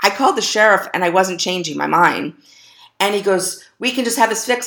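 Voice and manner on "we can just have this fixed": mock raised voice, pitched higher. Quoting the husband of the woman who rear-ended her, retelling a raised voice. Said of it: "He's raising his voice".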